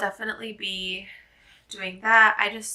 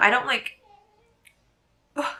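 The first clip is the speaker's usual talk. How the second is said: hiccup mid-sentence, higher pitch; 4 semitones higher than usual. Talking about a book, interrupted by hiccups. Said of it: "excuse me hiccups".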